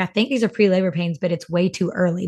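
plain

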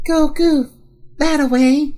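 weird whisper. Describing a montage scene, doing the line in Sylvia's weird whisper voice. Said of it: "In like a weird, like, whisper voice".

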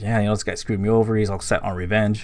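ordinary delivery

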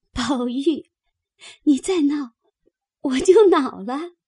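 out of breath from laughing. Reading a girl's line while she is being tickled, laughing breathlessly. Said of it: "便笑得喘不过气来，".

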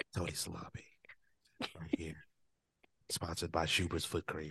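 put-on asmr whisper. Joking with another speaker about an earlier whispered line, doing a mock ASMR whisper. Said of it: "Very ASMR".

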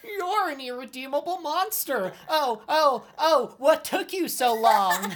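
very high-pitched cricket voice. Joining in quoting the movie's cricket character: Jimmy Stewart kind of voice. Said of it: "speaks in this, like, Jimmy Stewart kind of voice".

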